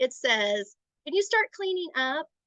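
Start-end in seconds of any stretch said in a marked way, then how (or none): 1.0-2.2 passive, rising, question-shaped tone. Showing a passive tone to use with a child, passive questioning tone. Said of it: "it sounds like a question".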